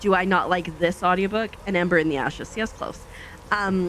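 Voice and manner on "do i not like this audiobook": usual speaking voice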